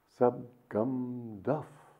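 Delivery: put-on marveling, childlike, each sound carefully shaped. Narrator reads Master's words while the Lewises try to sleep: marveling, careful, like a child. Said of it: "in marveling tones, ... like a child".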